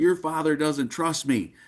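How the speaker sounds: put-on heated, fuming, yelling outburst. Retelling yelling at a wife after hanging up the phone: imitating own past yelling. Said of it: "I start yelling at my wife".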